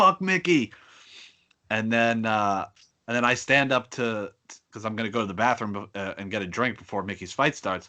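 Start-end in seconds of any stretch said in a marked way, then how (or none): 0.0-0.7 put-on screaming, much higher, louder. Retelling what kids in front screamed at a fight, imitating someone screaming. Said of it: "they're screaming like".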